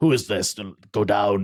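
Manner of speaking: put-on Scottish accent, put on. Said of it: "That's Scottish".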